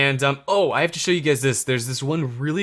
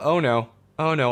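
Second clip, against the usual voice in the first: slightly panicked. Searching for a lost spaceship in the game: panicking a little. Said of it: "I'm panicking a little bit".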